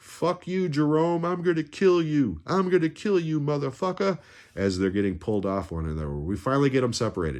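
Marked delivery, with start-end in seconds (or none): 0.0-4.2 mock screaming, pitched very high. Retelling two moviegoers fighting on the ground: imitating men screaming in a fight. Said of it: "screaming at each other".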